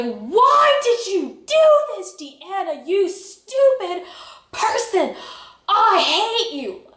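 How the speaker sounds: very high, swooping, drawn-out yell. Biking up and down the street, the speaker retells yelling at herself. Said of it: "I'm yelling at myself like".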